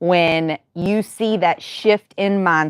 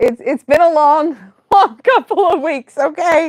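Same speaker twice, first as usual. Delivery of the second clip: high-pitched, laughing through the words. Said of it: "sorry, I'm laughing".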